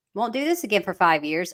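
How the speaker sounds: normal talking voice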